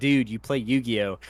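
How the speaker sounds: usual speaking voice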